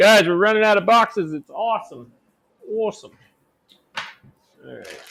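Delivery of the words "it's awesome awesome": soft, horribly bad put-on Jersey accent. Setting boxes aside and noting they're running out, in a horrible jersey accent. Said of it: "That's a horrible Jersey accent".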